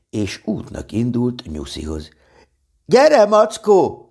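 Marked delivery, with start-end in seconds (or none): 2.8-3.9 very high, loud, ringing whooping call-out. Reading a children's story aloud, the boy calling to the bear as he sets off: calling out.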